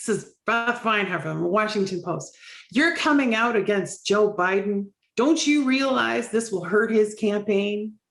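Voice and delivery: put-on very heavy, laid-on New York accent. Quoting what a washington post reporter said, in a very new york accent. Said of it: "very, very, very New York".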